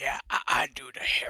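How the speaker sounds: rough, gravelly, breathy man's voice. Retelling what a guy said about the heron: imitating a gravelly voice. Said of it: "a gravelly voice".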